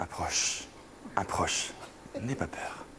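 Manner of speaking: whispered, hushed, breathy vampire voice. A speaker demonstrating to others how to say a line, in a Dracula voice. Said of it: "C'est pas un peu Dracula".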